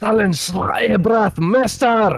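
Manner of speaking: high, loud, belted delivery. Voicing Pomeril mid-battle: Pomeril speaking Elvish. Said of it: "Was that Elvish or German?".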